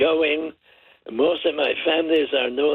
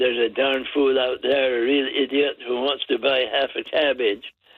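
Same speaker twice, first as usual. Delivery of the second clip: usual speaking voice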